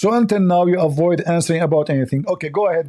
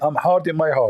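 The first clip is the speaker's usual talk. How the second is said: plain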